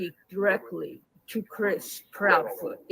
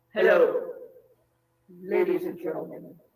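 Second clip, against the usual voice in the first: put-on demonic devil voice. Trying out different voices, the speaker greets ladies and gentlemen in a devil voice. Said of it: "This is the devil".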